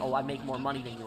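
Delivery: ordinary delivery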